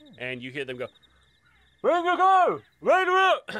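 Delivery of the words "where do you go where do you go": very high, very loud, shrill yell. Narrating soldiers on a city wall challenging arriving travelers, guards yelling. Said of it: "And they start yelling".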